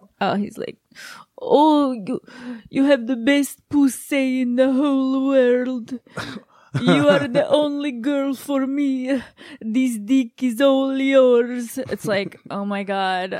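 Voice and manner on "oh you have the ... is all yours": put-on real thick, laid-on Italian accent, pitched up. Describing a man's sexy talk, in John's thick Italian accent. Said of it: "he's got a real thick Italian accent".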